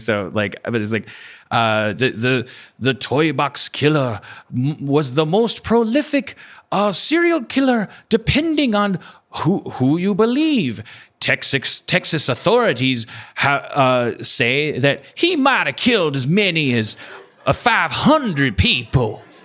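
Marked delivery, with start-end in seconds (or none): 2.8-19.2 put-on, weird, swooping Southern American accent. Asked to do the host's Southern accent: imitating a put-on Southern American accent. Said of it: "can you do it?".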